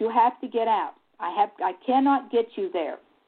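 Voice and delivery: faltering, halting broken english phrasing. Retelling what a driver said after stopping the car mid-road, imitating broken English. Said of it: "He said this kind of in broken English".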